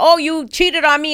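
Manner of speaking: high, accusing scream, acted out. Retelling past arguments with the other speaker: imitating own past screaming. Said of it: "screaming at him like".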